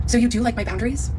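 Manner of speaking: plain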